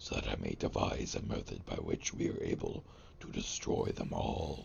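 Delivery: whispered undead giant woman voice.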